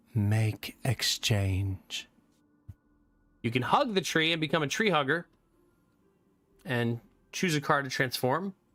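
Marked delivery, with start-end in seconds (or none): 0.2-2.1 creepy, eerie stage whisper. Reading a game event aloud, the creepy tree speaks: whispering. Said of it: "it whispers".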